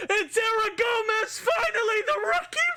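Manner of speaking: very high-pitched, loud, rising yell. Calling a goal in a tied game: yelling loudly. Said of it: "and I can yell".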